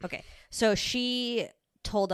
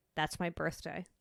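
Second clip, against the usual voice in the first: put-on deadpan, much quieter; 6 dB quieter than usual. Retelling the reply to a couple married on the speaker's birthday, retelling a deadpan reply. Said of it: "And like a deadpan".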